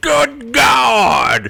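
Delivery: put-on southern commentator voice, talking from side of mouth. Showing how the commentator spoke from one side of the mouth: J R impression, talking from one side of the mouth. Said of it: "he'd do it from the good side of his mouth".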